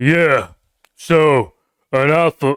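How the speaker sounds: very slow, very drawn-out, projected delivery. Mocking online self-improvement channels: imitating a deep projected voice. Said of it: "their voices are really deep, like, they're trying to project their voice".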